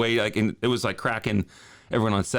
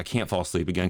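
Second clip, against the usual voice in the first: ordinary talk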